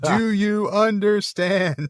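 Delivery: overdone, loud, slow, very high talking-down voice. Retelling how a captor questions a prisoner: imitating Sauron, loud and slow. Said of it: "saying it really loud".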